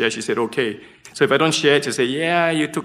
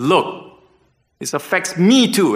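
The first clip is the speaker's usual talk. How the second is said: play-acted raised voice, high, very slow, drawn out; 6 semitones higher, 4 dB louder than usual. Retelling an argument with his wife, retelling raising own voice. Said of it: "and I raised my voice".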